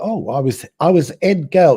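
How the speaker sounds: put-on London accent. Retelling a British woman's answer to a teasing interviewer, imitating her London accent. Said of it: "She speaks in a London accent".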